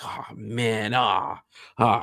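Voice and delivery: play-acted, drawn-out, very slow, dismayed groan. Retelling a character's reaction to who is in the next cell: imitating someone upset. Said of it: "all upset about this".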